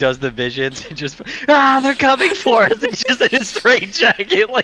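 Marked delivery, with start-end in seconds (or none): 1.8-2.8 high, loud, frantic panicked scream. Retelling what a man in a straitjacket did after his visions, imitating someone screaming. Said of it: "like screaming".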